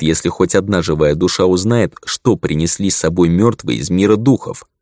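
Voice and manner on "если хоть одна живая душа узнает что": ordinary delivery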